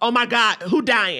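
ordinary delivery

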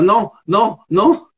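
repeated mock shouted cries. Speaker retells running to the toilets during a shoot, yelling while running. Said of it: "je cours vers les toilettes en criant".

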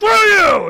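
acted, shrill, very loud, rude in-your-face yell. Acting out a rude restaurant owner who curses in customers' faces: Arlong cursing in your face. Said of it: "curse in your face".

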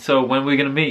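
ordinary talk, nothing marked

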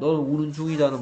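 ordinary talk

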